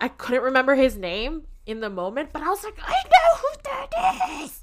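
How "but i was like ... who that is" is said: put-on very high, slow, drawn-out excited squeal. Retelling recognizing him while yanking a companion's arm, retelling an excited scream. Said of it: "I was screaming the entire time".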